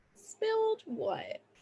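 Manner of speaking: very high, slow, soft, stretched-out suspicious voice.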